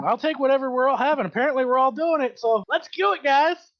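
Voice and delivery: excited, eager voice. Ordering a drink at the bar, excited in character. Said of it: "kind of excited".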